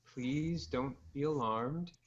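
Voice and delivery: very calm, gentle, soothing, even-tempered voice. Narrator voicing a stranger who speaks up behind a woman, very soft-spoken and calm. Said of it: "a very soft spoken voice comes up behind her and tries, it says very calmly".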